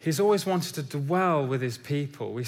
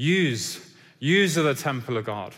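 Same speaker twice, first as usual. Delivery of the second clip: put-on Northern Irish accent, "you" said as "use". Preaching, showing how Paul would say it if Northern Irish, Northern Irish accent. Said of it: "that's my northern irish accent".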